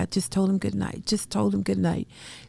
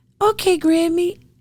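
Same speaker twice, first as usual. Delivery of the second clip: put-on tiny, sweet, very high child voice; 11 semitones higher, 7 dB louder than usual. A grandmother retelling his goodbye on the phone: imitating a little sweet voice. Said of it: "In that little sweet, sweet, sweet voice".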